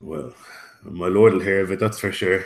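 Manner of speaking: muttered quietly under the breath. Playing a character after being told they can stay, muttered under breath. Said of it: "I'll mutter under my breath".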